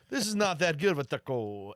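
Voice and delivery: put-on hard, heavy, full-blown Mexican Spanish accent. Imitating a TV chef judging a taco: Aaron Sanchez full accent. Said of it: "full blownsies".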